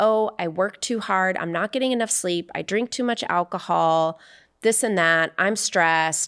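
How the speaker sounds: usual speaking voice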